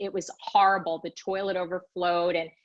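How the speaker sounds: ordinary talk, nothing marked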